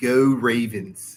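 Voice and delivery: put-on accent from Baltimore. Giving final words before signing off, in a Baltimore accent. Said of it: "my best Baltimore accent".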